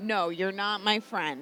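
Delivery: heavily sarcastic tone. Telling another speaker they are not a friend, sarcasm dripping off the words. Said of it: "the sarcasm dripping off of my words".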